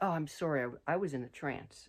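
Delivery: ordinary delivery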